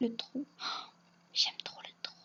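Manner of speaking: whispering. Speaker naming things she loves, whispering. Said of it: "Désolée, je chuchote".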